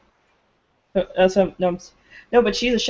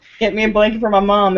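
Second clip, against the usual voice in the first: usual speaking voice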